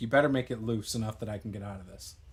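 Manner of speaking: soft, hushed half-whisper under the breath. Voicing a character who half-whispers to Snake during a tabletop game: half-whispering in character. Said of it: "I'll whisper to Snake".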